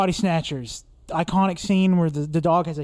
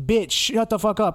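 nasty, rude, mean talking cartoon dog voice; 3 semitones higher than usual. Voicing an animated human-faced dog: imitating a rude, mean talking dog. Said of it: "really rude or just, like, mean".

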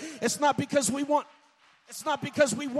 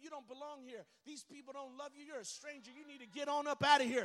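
very hushed devil voice, almost nothing; 14 dB quieter than usual. Preaching about the devil speaking to someone in church: voicing Satan. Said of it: "have the devil tell you".

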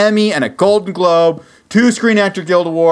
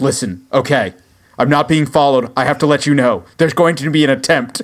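mock frantic voice, lower pitch; 4 semitones lower than usual. Acting out a show's opening phone call: imitating a frantic caller. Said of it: "they're frantically".

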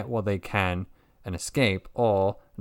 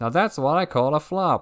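put-on game announcer voice, higher and louder; 7 semitones higher, 5 dB louder than usual. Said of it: "picture the, uh, Pokemon Stadium announcer".

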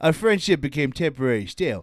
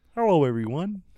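cartoon frog puppet voice. Asked to try Kermit real quick: Kermit voice. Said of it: "Try Kermit real quick".

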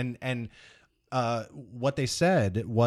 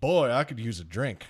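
imitated deep Southern accent. Retelling what an actor said after his last shot: imitating a deep southern accent. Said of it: "he has a deep Southern accent".

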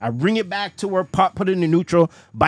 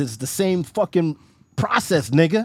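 ordinary talk

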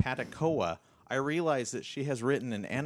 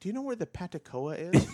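put-on high, frail elderly woman's voice; 6 semitones higher than usual. Retelling a customer in the store asking for an item, the speaker imitates a frail old lady. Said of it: "She was really old and very frail".

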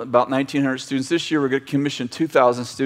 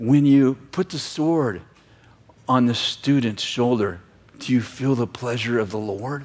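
whispering. Retelling what a leader asked while walking: imitating a whisper. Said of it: "he leans over and he whispers in my ear".

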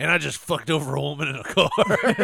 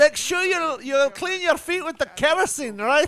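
put-on Scottish accent at a higher pitch; 12 semitones higher than usual. Joking about people cleaning their feet with kerosene: put-on Scottish accent. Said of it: "Is that the Scottish accent?".

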